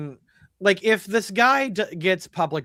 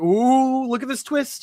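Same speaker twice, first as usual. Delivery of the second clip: mock smug voice, higher pitch; 6 semitones higher than usual. Mocking the show's writers showing off their twist: imitating smug writers. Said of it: "Do they really think they're just like".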